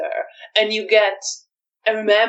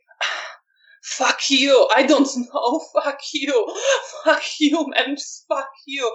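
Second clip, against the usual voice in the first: high, begging, pleading outburst; 8 semitones higher than usual. Voicing a character shaking his head at a question: pleading. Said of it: "it sounds like a pleading".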